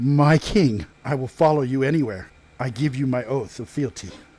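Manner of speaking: quavering, unsteady, shaky, trembling voice. Kneeling with sword drawn, a character swears fealty to his king; shaky voice. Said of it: "in a shaky voice".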